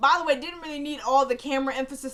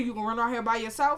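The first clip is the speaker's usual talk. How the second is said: ordinary talk, nothing marked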